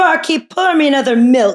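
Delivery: high calling out. Retelling an old parody bit where Kari Lake orders at a bar. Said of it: "she'd be like".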